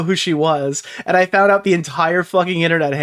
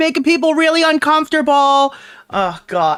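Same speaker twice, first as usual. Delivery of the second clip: mock fearful woman voice, higher; 10 semitones higher than usual. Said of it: "The fucking woman who's like".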